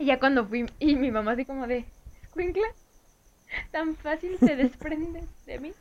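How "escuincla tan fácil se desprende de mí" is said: mock weepy, tearful, sobbing, crying voice. Retelling mom's reaction on the first day of kindergarten: imitating mom crying. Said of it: "Y mamá llorando así".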